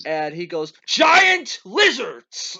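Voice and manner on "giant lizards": mock high, loud, shrill, swooping, hammy over-the-top delivery. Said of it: "he has an amazing line delivery".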